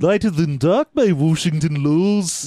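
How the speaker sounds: cartoonish, exaggerated Liverpool accent. Reading a book title aloud as the cartoon character, Wakko Liverpudlian accent. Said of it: "Wacko's the one with the Liverpudlian accent".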